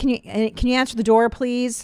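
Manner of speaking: mock snotty, sneering, slightly hostile tone. Retelling what someone says, the speaker makes the request mock-hostile. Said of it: "just a little more hostile".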